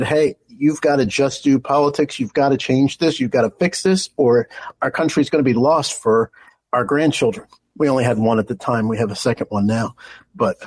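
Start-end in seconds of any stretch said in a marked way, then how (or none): none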